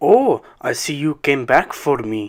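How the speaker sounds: acted very thick Russian accent. Retelling what a stranger in a coffee shop said: very thick Russian accent. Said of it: "in a very thick Russian accent".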